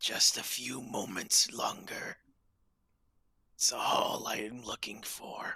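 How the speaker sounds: hushed whispered voice, in character. Voicing a figure speaking to a player during combat: whispering in character. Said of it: "you can hear his whispers".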